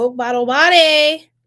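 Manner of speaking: full loud high yelling, word "body" stretched long. Reading cards for someone and repeating a phrase: yelling. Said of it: "Sorry, that was yelling".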